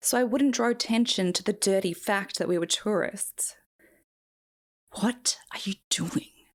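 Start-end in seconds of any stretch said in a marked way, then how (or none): 5.0-6.3 whispered, secretive, hushed voice. Reading a man leaning in to question the narrator, in a hushed voice. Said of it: "hushed his voice".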